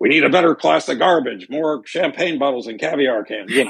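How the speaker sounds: high, hollering yell. Retelling an audition speech, a man yelling out his window to neighbors: retelling a yell.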